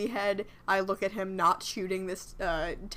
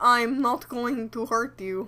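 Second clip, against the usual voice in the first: put-on inaccurate Russian-leaning accent; 4 semitones higher, 4 dB louder than usual. Playing a character walking out, calling people back to the party, Russian-leaning accent. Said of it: "Mine was definitely Russian leaning".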